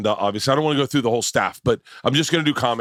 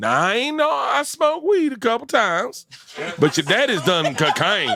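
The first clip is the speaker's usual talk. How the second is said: very high, swooping, put-on rural twang accent; 10 semitones higher than usual. Show the others your impression of Leanne in a redneck accent. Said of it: "This is my this is my impression of Leanne".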